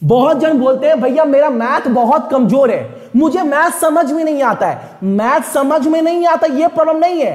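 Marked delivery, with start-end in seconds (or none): none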